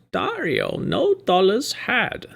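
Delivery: very high, slow, drawn-out swooping voice. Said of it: "like, the Yoda voice".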